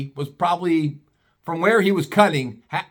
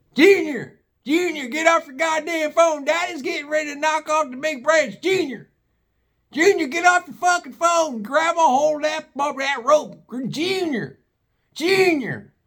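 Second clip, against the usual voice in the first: mock, very high-pitched, shrill, urgent hollering; 9 semitones higher than usual. Retelling a video where Wyatt yells at his brother: imitating Wyatt yelling. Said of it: "you hear Wyatt yelling".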